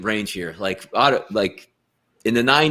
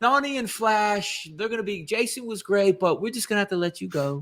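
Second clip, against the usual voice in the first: put-on, very high, soft, really nice voice; 9 semitones higher, 5 dB quieter than usual. Acting out a company letting someone go, in a put-on really nice voice. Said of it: "in a really nice voice".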